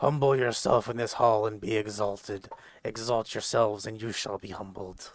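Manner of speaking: grumbled lines in a helmed warrior voice. A narrator voices a helmed swordsman addressing those in his hall: grumbling. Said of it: "he grumbles".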